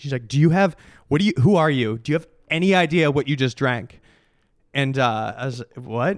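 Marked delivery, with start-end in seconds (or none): 0.3-4.0 put-on furious rant, slower. Speaker retelling a woman freaking out at her over a drink: mock-furious outburst. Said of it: "She starts freaking out at me, like so mad".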